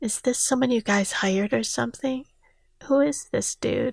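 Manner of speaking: soft, hushed whisper under the breath. Reading a story aloud, a guest asks about the visitor: whispering. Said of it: "Victor whispered".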